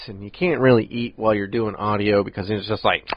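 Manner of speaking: ordinary delivery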